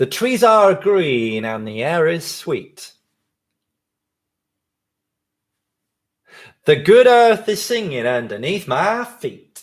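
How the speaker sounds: put-on American accent held throughout. Told to say it louder, repeating the lines: real american accent. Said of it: "This definitely needs to be in a real American accent".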